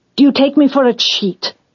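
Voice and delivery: suddenly irritable. Judah turns on Tamar, suddenly: irritable. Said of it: "suddenly irritable".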